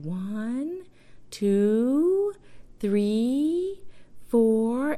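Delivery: high, syrupy, saccharine, sickly sweet voice. Recalling a woman counting to push through, speaker imitates her sweet, quiet voice. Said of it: "It was like this really sweet, quiet voice".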